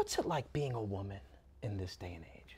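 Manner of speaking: earnest, serious, reflective, introspective tone, low and soft. Asking a mock interview question, in a serious, introspective voice. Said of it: "This is my serious, introspective voice".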